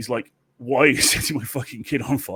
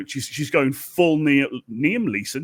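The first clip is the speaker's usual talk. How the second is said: ordinary talk, nothing marked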